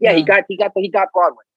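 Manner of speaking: put-on thick Brooklyn accent. Quoting his mother in a story, in a thick Brooklyn accent. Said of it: "my mom has the thickest Brooklyn accent ever".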